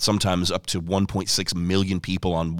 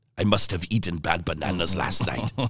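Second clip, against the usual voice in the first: comic, funny put-on German accent. Retelling what a man said after his dream, in a funny german accent. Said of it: "in that funny German accent".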